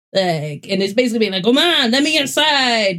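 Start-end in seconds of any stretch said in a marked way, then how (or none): 1.4-3.0 put-on high, slow cat voice with French accent. Retelling a video where a guy voices a cat in French: French cat voice. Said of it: "the guy is doing the cat's voice in French".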